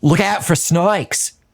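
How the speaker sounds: high-pitched, slow Australian accent.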